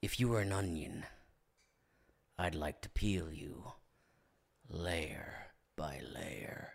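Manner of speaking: creepy killer voice, very low and hushed. Friends trading pickup lines; one delivers a line in a serial-killer-sounding voice. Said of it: "You sound like a serial killer".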